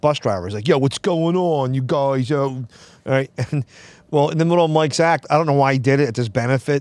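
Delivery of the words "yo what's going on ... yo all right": Philly street-cop way of talking. Telling a story about a bus driver friend's act: Mike's Philadelphia cop voice. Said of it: "talks like a Philadelphia cop".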